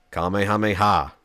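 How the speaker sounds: limp, lifeless, flaccid, flat monotone deadpan. Imitating how she says the Kamehameha sound: flaccid, flat delivery. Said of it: "It is monotone. It is deadpan".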